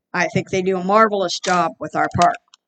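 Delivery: ordinary delivery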